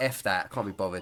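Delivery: plain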